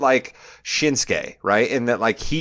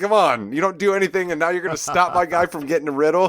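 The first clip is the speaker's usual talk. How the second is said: put-on exasperated, high-pitched, frustrated shouted complaint; 6 semitones higher than usual. Retelling a reaction to someone running out: retelling own yelling at someone. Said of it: "I was yelling at Adam Pierce".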